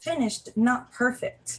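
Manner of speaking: haughty, superior, snooty voice. Explaining coding best practices to viewers, in a snooty architect voice. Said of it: "That's my uh, snooty architect voice".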